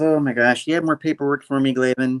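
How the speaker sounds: ordinary talk, nothing marked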